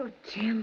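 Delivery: tearful. Answering a marriage proposal from Jim: crying. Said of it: "why are you crying?".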